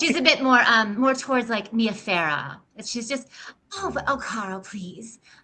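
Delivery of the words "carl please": purry, breathy, cute voice, much quieter. Discussing a Best in Show character, demonstrating her purry, breathy, cute voice. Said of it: "little bit more purry and breathy".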